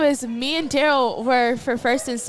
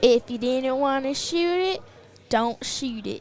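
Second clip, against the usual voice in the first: put-on unhurried, slow country drawl accent; 3 dB quieter than usual. Retelling advice a guy gave when asked what to do, imitating Pat Brown's country accent. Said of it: "he has a country accent".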